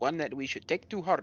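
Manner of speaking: put-on Indian accent drifting into something else. Speaking in character after a local's remark: indian accent drifting into something else. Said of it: "It started out Indian and then went somewhere completely different".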